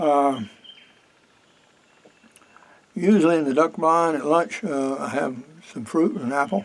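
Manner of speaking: talking while chewing, mouth full. Eating lunch while narrating a hunt, talking while chewing. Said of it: "Excuse me, I'm munching".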